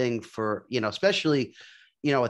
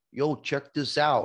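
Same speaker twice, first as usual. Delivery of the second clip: put-on New Jersey accent, slower. Retelling what a guy at the local flea market would say, new jersey accent. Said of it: "He'd be like".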